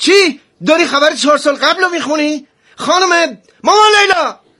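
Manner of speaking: angry, loud, very high shouting. A character reacts to someone reading news from four years ago, shouting. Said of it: "چرا داد میزنی؟".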